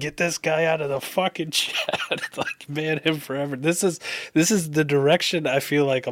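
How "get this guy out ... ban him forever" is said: put-on, high-pitched screaming rant. Speaker retelling a guy in a stream chat, retelling a scream. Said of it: "just like screaming".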